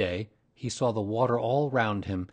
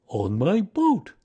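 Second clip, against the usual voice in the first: pleased, proud little line, raised and pitched up; 8 semitones higher, 6 dB louder than usual. Asked how he got here, he answers, proud. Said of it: "said Pooh proudly".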